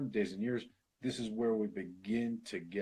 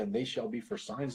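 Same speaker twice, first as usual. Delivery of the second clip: ordinary talk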